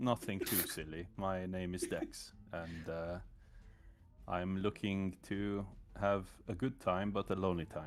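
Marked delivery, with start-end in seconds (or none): 1.2-7.9 put-on Scandinavian accent. Introducing a character in that voice when asked: put-on Scandinavian accent. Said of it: "I went for the, uh, for the Sca-, Scandi connection today".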